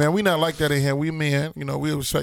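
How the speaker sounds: ordinary talk, nothing marked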